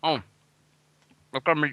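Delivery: talking with mouth full while eating. Chatting on a stream while eating a pie, mouth full of pie. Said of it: "I've got my mouth full of pie".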